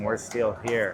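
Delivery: ordinary delivery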